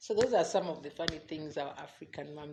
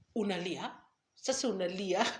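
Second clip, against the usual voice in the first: mock teasing, jabbing, sarcastic delivery; 3 semitones higher than usual. Retelling a mom's sarcastic reply to a crying child: imitating mom's sarcastic question. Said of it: "these sarcastic responses".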